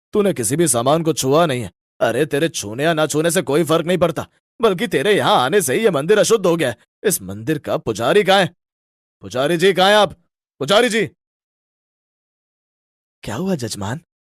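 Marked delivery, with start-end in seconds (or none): 9.2-11.1 loud hollering, calling-out shout. Calling out for the temple priest, shouting. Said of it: "आप चिल्ला क्यों रहे हैं?".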